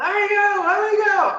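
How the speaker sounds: shouting. Voicing a rabbit boy caught after a fall, struggling: yelling. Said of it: "he continues to yell".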